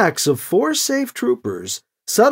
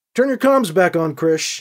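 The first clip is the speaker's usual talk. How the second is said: plain reading voice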